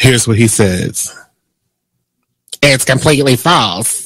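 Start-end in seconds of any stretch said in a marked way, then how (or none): 2.6-4.1 put-on older-woman character voice. A host quotes a man's denial of rumors, in a Madea voice. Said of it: "That was my Medea voice".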